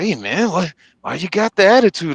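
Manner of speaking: play-acted patronizing, superior, talking-down tone. Retelling what another driver said: imitating someone talking condescendingly. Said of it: "trying to talk to me all condescendingly".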